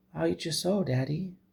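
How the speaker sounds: put-on very high, creaky, innocent-sounding girl's voice. Retelling a tied-up girl speaking to her dad, in a mock-innocent voice. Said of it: "she says so innocently".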